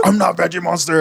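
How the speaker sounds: high-pitched, furious protesting voice. Retelling a Sesame Street episode: imitating Cookie Monster angry. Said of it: "he's all fucking pissed off".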